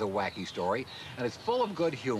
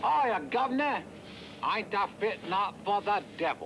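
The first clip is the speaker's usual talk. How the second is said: bad, fake Cockney accent, much higher; 7 semitones higher than usual. Recreating a role he played in a parody, in a bad Cockney accent. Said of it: "one of the worst Cockney accents I've ever heard".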